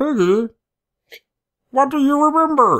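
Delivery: very high, loud, squeaky cartoon frog voice. Retelling a game scene, imitating Kermit the Frog. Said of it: "I'm gonna do my Kermit, Kermit the Frog impression".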